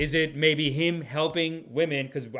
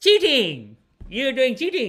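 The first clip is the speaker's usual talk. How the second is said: put-on loud, sing-song Indian accent; 9 semitones higher, 7 dB louder than usual. A speaker acts out a vague answer about a charge, imitating an Indian accent. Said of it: "That's so Indian".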